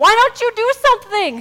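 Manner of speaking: high, loud, indignant, challenging tone. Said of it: "most indignant".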